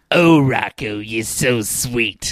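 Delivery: cartoon housewife character voice. Going through a cartoon's characters with others, in a Mrs. Bighead voice. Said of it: "Mrs. Bighead".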